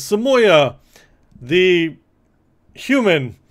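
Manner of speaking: high, loud ceremonial announcing.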